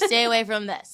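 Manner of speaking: ordinary talk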